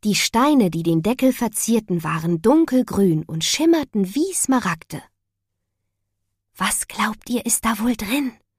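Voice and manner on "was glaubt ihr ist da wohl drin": hushed whispering. Mia speaking to Jasmin and the others about the box: whispering. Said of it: "flüsterte Mia".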